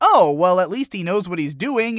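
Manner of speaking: plain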